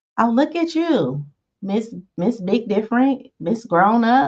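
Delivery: high, snarky, mocking teasing tone.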